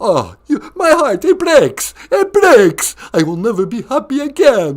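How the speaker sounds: mock heartbreak, count's voice. Answering a turned-down proposal: put-on Count voice, mock heartbroken.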